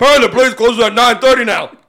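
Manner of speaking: man bellowing at full volume, loud yelling. Retelling what a guy kept yelling at them: retelling a man yelling. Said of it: "He's just yelling this".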